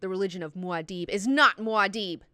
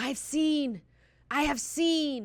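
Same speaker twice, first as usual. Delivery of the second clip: wild, high, dragged-out scream; 6 semitones higher than usual. Telling a story about a dancer who comes out of a trance, retelling someone screaming. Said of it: "he starts screaming".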